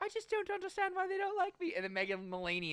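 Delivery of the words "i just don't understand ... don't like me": put-on British accent with very high pitch. Imagining a cast scene, the speaker voices Daisy Ridley in a British accent. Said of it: "British accent and all".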